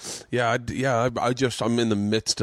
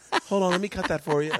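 gentle, small little voice, pitched up; 9 semitones higher than usual. Imitating how Tom Papa parents at a restaurant: imitating Tom Papa's gentle little voice. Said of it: "With his gentle little voice".

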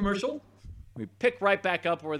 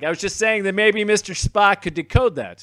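louder, higher repeated words. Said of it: "I didn't hear you".

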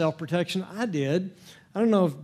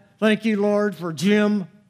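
forced, through gritted teeth, higher and louder; 2 semitones higher, 4 dB louder than usual. A preacher acts out someone thanking god for an unlovable person: through gritted teeth. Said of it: "it may be through gritted teeth".

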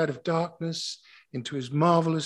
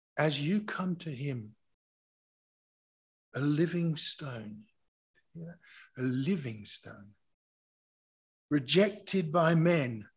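reading really slowly, unhurried and much slower; 4 dB quieter than usual. The speaker reads a passage from 1 peter to listeners, reading really slowly. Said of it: "I'm going to read this really slowly".

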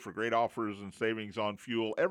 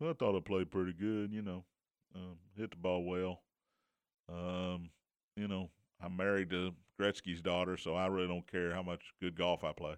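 put-on laid-back golfer voice; 4 semitones lower, 6 dB quieter than usual. Acting out a golfer answering an interviewer: D J impression. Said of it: "That's my D J impression".

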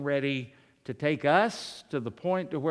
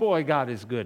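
put-on sarcastic voice; 3 semitones lower than usual. Retelling what a friend once said: imitating a sarcastic friend. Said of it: "he was being sarcastic".

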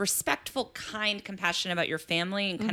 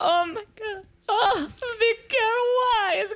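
very high, slow tearful moan; 5 dB louder than usual. Telling how his mom reacts when he travels, imitating her weepy immigrant voice. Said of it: "real weepy immigrant, because she's an immigrant voice".

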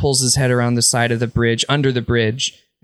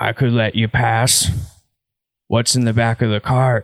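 troll voice with a smile in it. Voicing a smiling troll blocking a bridge: smiling troll voice. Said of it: "He smiles and says".

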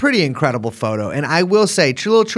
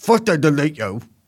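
put-on odd, bizarre blend of English and American accents. Reading a quote as an impression of Andrew Tate. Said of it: "impression of Andrew Tate in his bizarre English American accent".

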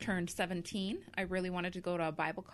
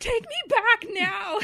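shrill, full-volume, very loud, high-pitched yell; 14 dB louder than usual. Retelling being left in the mountains, imitating herself yelling. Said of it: "yelling at him".

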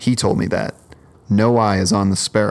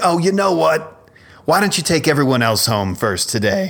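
put-on high-pitched elderly man voice; 7 semitones higher than usual. Retelling a bus passenger asking to go home last, imitating George's way of talking. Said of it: "he kinda talked like this".

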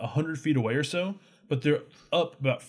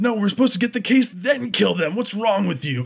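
fast, pitched-up, barked scolding tone; 7 semitones higher, 6 dB louder than usual. Voicing a character addressing the offender, barking out at the offender. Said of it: "He barks out to the offender".

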